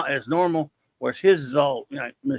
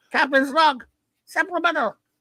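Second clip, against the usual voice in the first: cartoonish voice, much higher and faster; 12 semitones higher than usual. Reading a captain's log entry, in a sunday morning cartoon voice. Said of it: "like a Sunday morning cartoon character".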